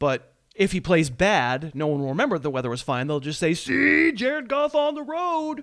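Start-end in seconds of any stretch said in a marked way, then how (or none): 3.5-5.6 very high character voice, words dragged out. Imitating critics dismissing Jared Goff's road games: Dak voice. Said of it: "That was my Dak voice".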